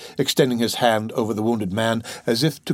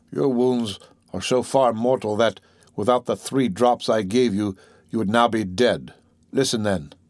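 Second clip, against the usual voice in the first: plain reading voice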